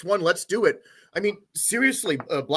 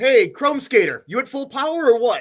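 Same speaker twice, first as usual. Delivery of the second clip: loud yelled call, projected over distance; 4 semitones higher, 6 dB louder than usual. In the game, yelling over to Chrome Skater: yelling across to Chrome. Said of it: "I yell over to Chrome".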